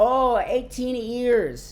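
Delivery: put-on speaking with an Indian accent. Retelling a family joke, imitating mom answering her sons, mom's Indian accent. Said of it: "her Indian accent".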